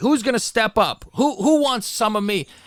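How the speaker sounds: put-on half-held yell. Recapping how a man went into the locker room: retelling a yell at everybody. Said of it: "starts yelling at everybody".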